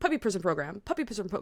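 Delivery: said very fast. Trying to say a tricky phrase three times fast: said fast. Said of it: "Say that three times fast".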